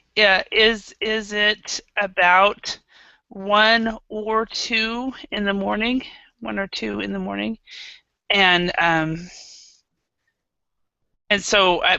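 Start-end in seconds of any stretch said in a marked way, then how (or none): none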